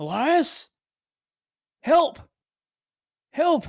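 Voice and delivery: high, crying-out call. Narrating to Elias, voice his dad suddenly calling out to him: calling out for help. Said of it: "you suddenly hear your dad calling out".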